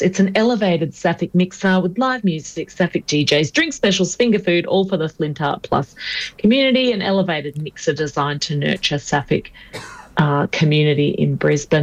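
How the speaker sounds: female official press-release reading voice. Host announcing an upcoming mixer to a co-host, press release lady voice. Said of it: "I'll put on my press release lady voice".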